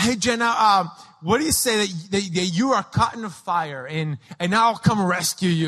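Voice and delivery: plain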